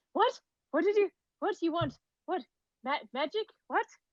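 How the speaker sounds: a little anxious. Game narrator voices a woman looking up at the players, a little anxious. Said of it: "she seems to be a little anxious".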